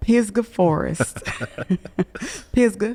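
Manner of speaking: local country accent on "Pisgah Forest". Asked to repeat a place name, saying it the way locals do, in a country accent. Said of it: "I feel like I need to say it with a country accent".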